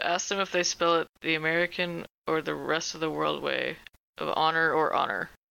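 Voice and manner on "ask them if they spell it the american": plain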